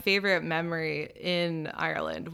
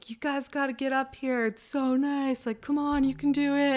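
put-on yell as from afar, higher pitch; 8 semitones higher than usual. Retelling a friend calling down from the top of a hike: imitating Will yelling. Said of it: "Will was yelling to us from the top".

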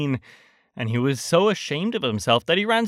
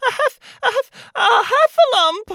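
out of breath, barely speaking, higher and louder; 6 dB louder than usual. Reading a story aloud, Piglet after running to Christopher Robin: out of breath, barely speaking. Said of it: "breathing so hard that he could hardly speak".

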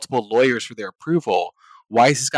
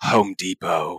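bitter mumbling mutter, lower in pitch; 6 semitones lower than usual. Retelling how coworkers would mutter under their breath: imitating a bitter mumble. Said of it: "just very bitter way".

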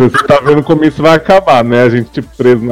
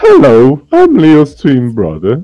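put-on British accent; 2 semitones higher than usual. Introducing himself on a podcast as a twin brother: put-on British accent. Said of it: "I'm British".

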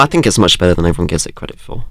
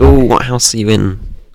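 usual speaking voice

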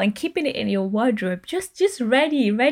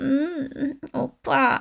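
put-on soft, sweet, feminine, cutesy baby voice; 3 semitones higher, 4 dB quieter than usual. Imitating how K-drama women talk to a partner: put-on cutesy voice. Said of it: "they just do like".

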